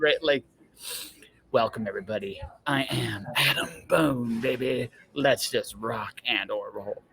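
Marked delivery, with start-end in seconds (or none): 1.5-7.0 slow, big, epic heavy-metal host voice. Pitching a heavy metal podcast idea, showing its intro in an epic heavy metal voice. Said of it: "like you just do like an epic heavy voice".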